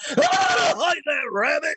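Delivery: very high, slow, swooping cowboy-style drawl. Boasting about doing every voice in a movie, a Yosemite Sam voice. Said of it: "You want Yosemite Sam?".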